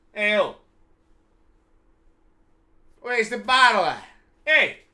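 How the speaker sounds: put-on New York accent, lightly applied. Trying out accents on a kid, throwing in a little New York: New York accent. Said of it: "I'm gonna throw a little New York at you".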